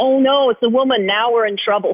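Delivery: mild heckling call-out. Performer retelling what someone yelled as she went on stage, retelling a yell from the crowd. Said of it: "someone yells out".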